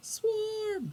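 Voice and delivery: put-on very high, shrill, alarmed child-like shout. A character pokes his head out and calls to the group, yelling. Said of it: "just yell".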